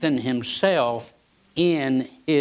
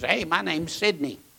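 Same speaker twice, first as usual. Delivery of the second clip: put-on Middle Eastern accent; 3 semitones higher, 3 dB quieter than usual. Imitating a phone caller introducing himself, in a heavy Middle Eastern accent. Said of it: "this heavy Middle Eastern accent says".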